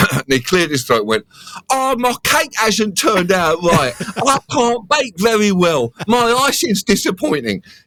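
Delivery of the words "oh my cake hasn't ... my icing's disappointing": put-on very high, slow, meek British child voice. Retelling his impression of a british child failing at baking, timid british child impression. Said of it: "an impression of a British child with no confidence failing at baking".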